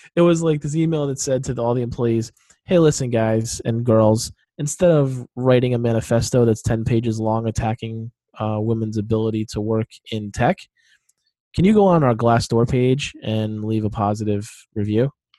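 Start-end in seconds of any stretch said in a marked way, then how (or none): none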